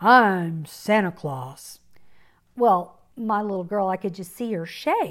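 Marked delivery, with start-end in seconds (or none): 0.0-1.8 rough, gruff, deep big-guy growl. Retelling what a man said as he picked up her little girl, in a gruff voice. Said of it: "in a gruff voice said".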